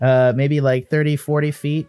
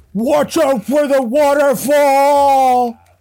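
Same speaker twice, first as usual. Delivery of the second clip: very high, very slow, drawn-out scream; 12 semitones higher, 5 dB louder than usual. Voicing a crab who calls out as the party passes by: screaming. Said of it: "he screams out".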